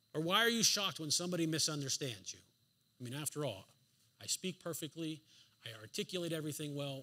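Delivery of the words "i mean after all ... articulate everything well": soft, quick, tossed-off sarcastic tone. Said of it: "That's sarcasm".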